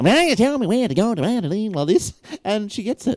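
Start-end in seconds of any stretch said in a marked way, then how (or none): 0.0-1.1 silly, real stupid put-on voice. Repeating a request the assistant misunderstood, in a real stupid voice. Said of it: "I'll say it in a real stupid voice".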